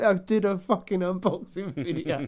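shaken, distraught, slow despairing lament. Imitating a commenter sitting there shaking back and forth: imitating someone distraught. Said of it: "sitting there shaking back and forth like".

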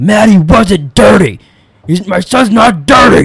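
loud, drawn-out yell. Retelling how a man yelled at a woman before storming out, retelling a yell. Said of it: "he yells at her and goes".

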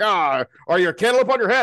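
put-on high, loud, gruff, scolding old-fashioned dad voice. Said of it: "father was like".

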